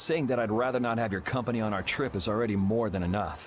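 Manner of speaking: ordinary delivery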